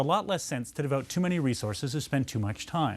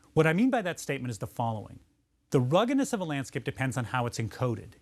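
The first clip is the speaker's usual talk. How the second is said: usual speaking voice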